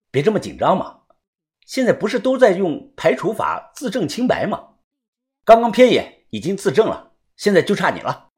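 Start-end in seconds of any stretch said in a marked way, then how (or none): none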